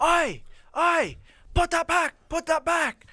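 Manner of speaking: play-acted very high, shrill yelling. Telling a story about a store owner catching them, retelling his yell. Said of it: "started yelling".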